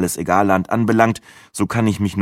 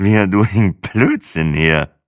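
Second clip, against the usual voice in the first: put-on very slow, drawn-out drunken slurring babble. Narrator reads his own line spoken into a woman's ear, drunken slurring. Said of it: "lallte ich der Rakete ins Ohr".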